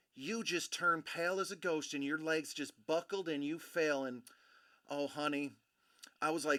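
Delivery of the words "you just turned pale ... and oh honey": beautiful little put-on Southern belle drawl. Retelling what a woman said after a fall: imitating a Southern belle drawl. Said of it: "in this beautiful little Southern belle drawl".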